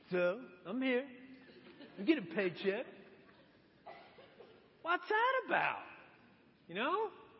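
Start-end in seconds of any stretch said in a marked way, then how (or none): 0.6-5.8 sour, sulky, grudging tone. Acting out a worker who walks into work, mock sour attitude. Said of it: "If you have a sour attitude when you walk into work".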